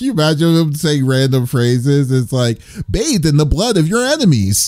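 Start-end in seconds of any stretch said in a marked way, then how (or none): 2.9-4.7 bright, chipper, uppity announcer voice, pitched up. Imagining the announcer saying random phrases, uppity announcer voice. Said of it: "he always has a nice uppity voice".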